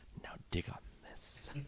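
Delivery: hushed, barely voiced whisper, very close up. Joking about a jazz bar fight, the speaker whispers into people's ears. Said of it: "I'm just gonna whisper into people's ears".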